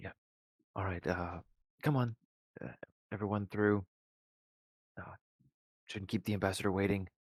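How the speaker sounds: extremely bewildered, utterly confused. Voicing a character in a told scene, extremely bewildered. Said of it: "just seems extremely bewildered".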